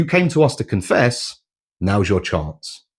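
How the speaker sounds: ordinary delivery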